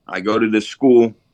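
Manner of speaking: ordinary delivery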